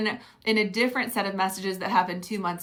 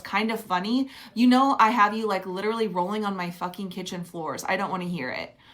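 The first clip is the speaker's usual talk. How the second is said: ordinary delivery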